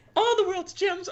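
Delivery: bad, squeaky, very high cartoon mouse voice. Asked by friends to do an impression, a speaker performs a bad imitation of a cartoon character, in a high cartoon character voice. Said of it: "I would love to hear your Rouge impression".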